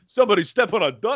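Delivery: put-on, high, sudden yell. Retelling how someone at a party broke the silence after a fart, retelling a yell. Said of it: "and then just yells".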